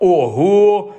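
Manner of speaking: astonished, amazed exclaiming. Narrator reads Ron reacting as Harry suddenly turns up; amazed exclamation. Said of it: "вражено вигукнув Рон".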